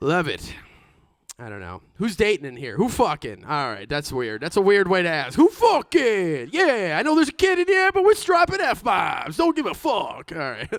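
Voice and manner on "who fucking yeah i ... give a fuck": very high, swooping, slow New Jersey gangster drawl. Talking to a room with a kid in it, in a Tony Soprano voice. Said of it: "why I sound like Tony Soprano suddenly".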